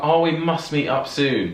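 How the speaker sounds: high, slow, drawn-out, fake-polite British voice.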